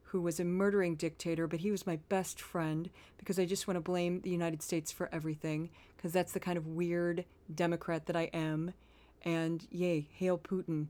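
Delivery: steady, low, even-keeled delivery, rattled off. Speaker mocks a woman before playing her clip, mocking even-keeled impression. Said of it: "a quick impression of her voice um because she always talks so even keel".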